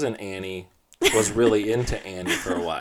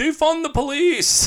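put-on mocking voice, much higher and louder; 6 dB louder than usual. Retelling how the listener's sister joked as the police band passed, retelling a mocking joke. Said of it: "mockingly and jokingly said".

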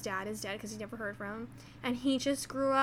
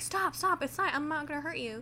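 mock yelling, much higher pitch; 4 semitones higher than usual. Retelling a scene where he yells at the panicking woman, acting out a yell. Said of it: "And he's yelling at her".

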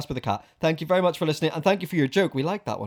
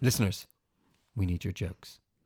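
low, serious, earnest tone. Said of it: "that's gonna be our new catchphrase".

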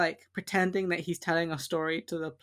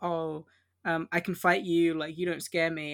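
plain

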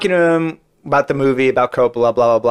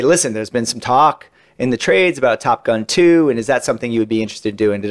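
normal talking voice

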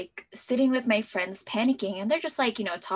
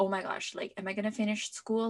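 ordinary talk

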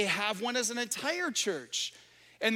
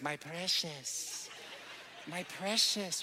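slow, creepy, breathy whisper; 4 semitones lower, 7 dB quieter than usual. Comparing selfishness to a creature clutching a ring: Gollum voice. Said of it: "Gollum has the ring, and he's like".

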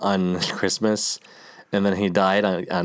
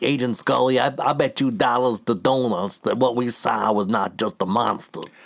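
really bad, poorly attempted New York accent; 3 semitones higher than usual. Mocking an actor's line from a show, doing a bad New York accent. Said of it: "New York... Accent, and it's so bad".

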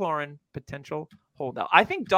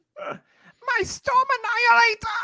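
very high-pitched, old-school cartoon villain voice. Joking with a co-host about a team's new name: old-school Cobra Commander voice. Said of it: "That's my old school Cobra Commander voice".

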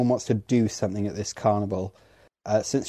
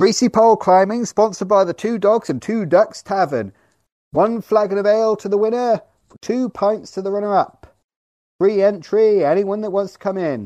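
very high, loud, shouted-out public call; 11 semitones higher, 7 dB louder than usual. Voicing someone in the scene calling out to a crowd: shouting out an announcement. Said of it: "with someone shouting out".

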